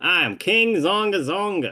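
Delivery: put-on Western-accented villain voice. Revealing himself as the villain, no longer the cowboy friend, in King Zonga Zonga's Western accent. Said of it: "I keep the Western accent".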